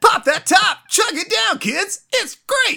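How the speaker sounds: very high, loud, belted cartoon voice. Speaker riffs on talking like the 90s cartoon: 90s Ninja Turtles voice. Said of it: "talk like the 90s Ninja Turtles".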